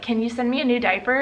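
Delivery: ordinary talk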